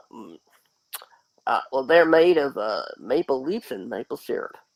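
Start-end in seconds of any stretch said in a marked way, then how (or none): 1.8-4.5 folksy American southern accent, casual drawl. Answering a question about Canadian women, in a southern accent. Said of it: "I don't know why I give that a southern accent".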